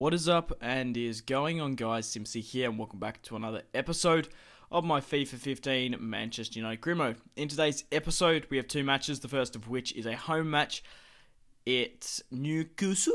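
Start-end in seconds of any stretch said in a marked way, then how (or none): 11.6-13.1 sudden put-on Geordie Newcastle twang. Announcing the next home match in a FIFA video, in an attempted Newcastle accent. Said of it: "I was trying to do a Newcastle accent".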